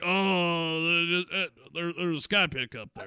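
different voice with a long drawn-out oh. Retelling how a radio host handles Skype trouble: Alex Jones impression. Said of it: "That's a good impression".

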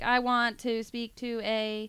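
very slow, deliberate voice, each word dragged out. Quoting the other speaker contacting podcast people: Stephen Hawking voice. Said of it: "Why do I sound like Stephen Hawking?".

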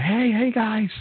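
joyful, very high-pitched, happy shouted yell. Speaker recalls a cheerful boy greeting everyone, retelling a happy yell. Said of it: "He was so happy and yelling".

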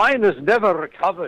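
put-on very heavy Scottish accent, pitched high. Quoting a patient from the speaker's documentary, in a thick Scottish accent. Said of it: "in a very thick Scottish accent".

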